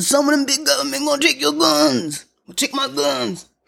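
very high, creaky, rough hillbilly voice. Describing people frightened of losing their guns, Bubba hillbilly voice. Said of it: "That's my Bubba Hillbilly voice".

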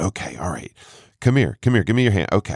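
mock-annoyed, grudging put-on tone. A man retells answering his mom's request to pray over her friend, retelling an annoyed grudging tone. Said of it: "and i'm so annoyed".

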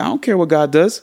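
high, affected, put-on street-style voice.

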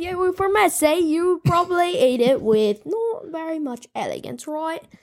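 put-on British accent. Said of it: "teach us how to talk in a British accent".

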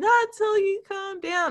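very high, weepy voice talking through sobs. Recounting a movie scene where a woman speaks from the bathroom, imitating someone crying. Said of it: "she's in the bathroom crying".

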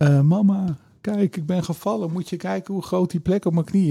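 mock, high, tearful crying little girl voice. Speaker acts out the little sister coming to mom after a fall, imitating a crying child. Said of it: "huilend naar mama komt en zegt".

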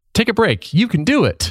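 very high, upbeat, encouraging tone. Demonstrating how a blocking app could sound when it blocks things, encouraging. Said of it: "you can have it be like encouraging".

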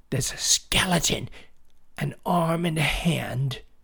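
stage whisper meant to be heard. A boy, asked by his dad what happened, answers in a loud whisper. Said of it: "In a loud whisper".

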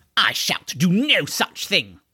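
curt, cutting, sharp and snapping. Narrating the lanky horseman refusing Deirdre: said sharply. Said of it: "the lanky horseman said sharply".

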